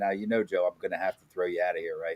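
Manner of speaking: kindly, soft, calm half-whisper, close. Retelling what Willie half-whispered in the ear: imitating Willie's half-whisper. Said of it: "he whispers in my ear".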